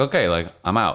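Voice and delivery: ordinary talk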